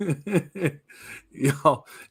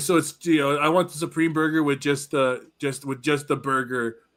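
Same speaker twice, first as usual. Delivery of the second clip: plain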